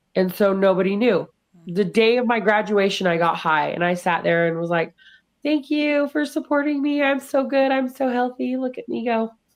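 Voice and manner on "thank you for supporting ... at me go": higher-pitched, faked normal, everything's-fine tone. Recalling thanking people at her rehab graduation while secretly high, faking being fine. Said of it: "I was really good at acting normal".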